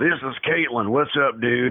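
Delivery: masculine-sounding voice. Speaker describes how her voice used to sound, imitating her old masculine voice. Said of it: "My voice sounded like".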